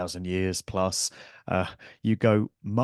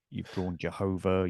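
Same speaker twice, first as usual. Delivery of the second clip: plain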